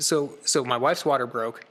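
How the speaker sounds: usual speaking voice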